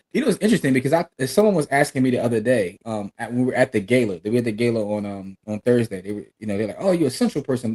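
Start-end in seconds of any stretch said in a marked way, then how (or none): 6.8-7.7 teasing, acted-out sarcastic dig. Retelling what someone at a gala said: imitating a sarcastic tone. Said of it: "Being sarcastic".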